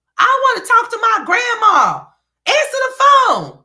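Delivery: put-on high, loud whiny little boy shout. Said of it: "how he was acting when Stella wouldn't answer".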